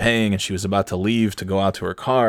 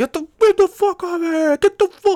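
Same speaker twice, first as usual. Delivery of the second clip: mock female scream, much higher and louder; 4 dB louder than usual. Retelling how a woman behind a car screamed at a dog, acting out screaming. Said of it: "she's just screaming".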